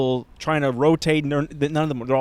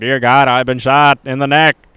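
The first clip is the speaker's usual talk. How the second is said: put-on loud, raised Boston accent; 3 semitones lower, 8 dB louder than usual. Retelling the story of JFK being shot, quoting him: JFK's Boston accent. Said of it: "Boston accent being like".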